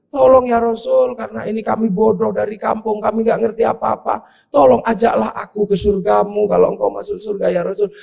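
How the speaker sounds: put-on crying, pleading voice through tears. Retelling a villager hugging the Prophet and begging: acted crying while pleading. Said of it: "nangis orang ini".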